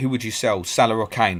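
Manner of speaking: ordinary talk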